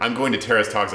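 ordinary talk

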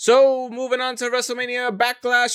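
put-on 1940s-style voice, pitched way up, auctioneer style. A host moves on to the next topic in a put-on 1940s-style voice. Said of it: "I don't know why I put that voice".

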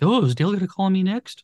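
high, panicky, worried voice. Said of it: "everybody else in the room is all of a sudden panicking".

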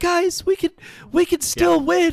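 high-pitched, slow, hopeful delivery. Retelling a player asking the injured quarterback a question: imitating hopeful George Kittle. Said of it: "just so hopeful".

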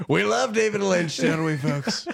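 loud, high, creaky voice. Pretending to be Laura Dern called over to speak: Laura Dern impression. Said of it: "That was my Laura Dern impression".

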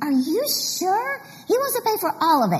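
play-acted, thrilled, high-pitched excited shouting. Retelling a phone call to Donna about someone paying for everything, retelling shouting on the phone. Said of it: "I was just shouting on the phone to Donna".

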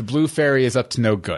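ordinary talk, nothing marked

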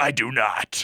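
surprisingly big, deep put-on voice. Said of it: "this small character actually has a deep voice".

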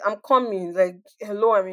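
plain

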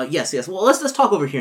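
scared, high and loud. Retelling how a man reacted when agents showed up, imitating a frightened man. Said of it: "he gets this look of like fear".

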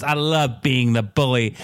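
ordinary talk

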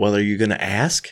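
imitated crying, tearful voice. Retelling what the fiancée said during the proposal: imitating someone crying. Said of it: "With tears running down her face".

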